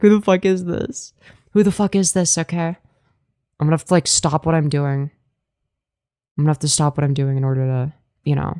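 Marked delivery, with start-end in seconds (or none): 0.0-2.1 high, put-on terrified outburst. Acting out the reaction if someone joins the voice chat: put-on terrified reaction. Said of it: "I'm gonna get terrified if somebody joins".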